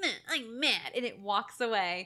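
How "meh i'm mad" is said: put-on pouty, sulky, childish huff with little-kid anger. Retelling how the monster reacts before walking away: imitating a sulky angry kid. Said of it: "just as angry, like a little kid".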